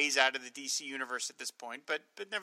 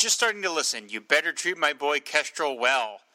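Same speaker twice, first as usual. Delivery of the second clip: ordinary talk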